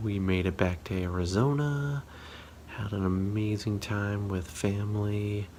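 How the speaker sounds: soft whispering voice. Recording late at night while family sleeps, whispering. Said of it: "I'm whispering because everybody in my family is sleeping".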